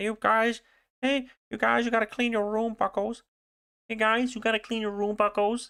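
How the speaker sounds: very high, squeezed-up put-on voice. Reading game text, then breaking off into a Jordan Peterson impression. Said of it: "my Jordan, uh, Jordan Peterson impression".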